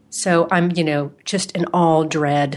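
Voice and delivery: ordinary talk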